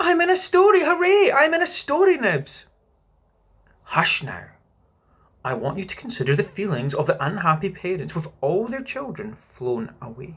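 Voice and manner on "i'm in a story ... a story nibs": very high, gleeful, joyful shout. Tootles, one of the lost children, cries out joyfully to nibs. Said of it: "cried Tootles".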